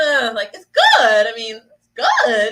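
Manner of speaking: extra emphasis on "good", slow and drawn out.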